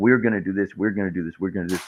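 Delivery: put-on overconfident, bragging voice. Mocking a politician's overconfident plans: imitating Donald Trump bragging. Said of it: "very overly confident and braggadocious when he's like".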